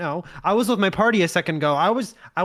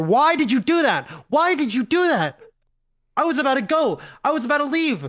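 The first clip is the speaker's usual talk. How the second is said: high, frantic, panicked freak-out; 6 semitones higher than usual. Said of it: "they start freaking out more".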